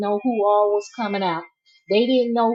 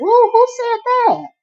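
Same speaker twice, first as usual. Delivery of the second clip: put-on voice, very high-pitched and loud; 14 semitones higher, 7 dB louder than usual. Reading out a viewer's comment, then asking who said it: Portia voice. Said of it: "In my Portia voice".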